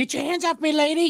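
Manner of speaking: very high, birdlike talking-parrot voice. Asking the others to imagine hearing a parrot: imitating a talking parrot. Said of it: "you hear the parrot go".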